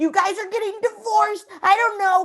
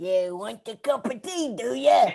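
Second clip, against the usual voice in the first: very low, deep northern English accent; 9 semitones lower, 3 dB quieter than usual. Asked what the accent for the play sounds like, demonstrating a northern English accent. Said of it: "what does it sound like?".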